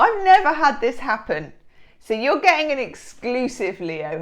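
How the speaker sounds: thrilled shout, high and swooping pitch. Speaker reading cards for a listener, excited shouting. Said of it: "I'm shouting because I'm excited".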